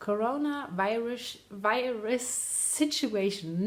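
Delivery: slow, careful delivery. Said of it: "Say that three times fast".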